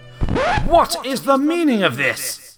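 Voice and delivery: very high, loud, swooping, roaring bellow. A prince turns to the princess at his side and demands an answer, bellowing.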